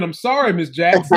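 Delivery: ordinary delivery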